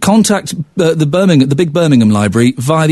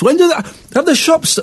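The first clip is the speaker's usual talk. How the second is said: very high voice, talking through a full mouth; 11 semitones higher than usual. Radio host on air, asking about shops mid-bite, talking while chewing a carrot. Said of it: "sorry, I'm munching a carrot".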